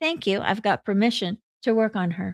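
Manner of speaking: ordinary talk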